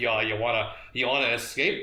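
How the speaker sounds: usual speaking voice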